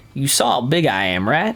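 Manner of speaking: put-on Southern accent. Voicing a game character line after deciding on a southern accent: put-on southern accent. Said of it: "Southern accent".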